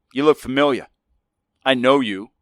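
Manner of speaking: a touch of American twang. Retelling what a guy said when he walked in: a bit of American accent. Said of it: "a bit of American accent".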